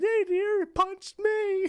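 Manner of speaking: put-on crying, very high sobbing voice. Telling how she ended up three years after her first videos, imitate someone crying. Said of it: "she's crying like".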